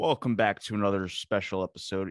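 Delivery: put-on deliberately deep, serious, weighty delivery. Host welcoming listeners back to a special episode, in his put-on deep voice. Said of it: "I put on my deep voice".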